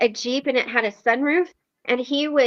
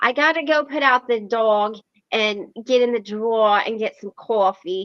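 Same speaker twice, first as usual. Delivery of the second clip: everyday put-on New York accent; 2 semitones lower than usual. Showing how a longtime friend with bronx parents talks, imitating a friend's new york accent. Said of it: "The New York accent".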